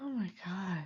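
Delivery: soft, shocked, stunned whisper under the breath.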